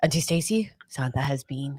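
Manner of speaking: grave, doom-laden, ominous portentous delivery. Retelling a nephew announcing santa came: imitating nephew, ominous like "winter is coming". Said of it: "he said that, like, winter is coming".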